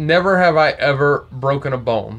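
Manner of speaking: ordinary talk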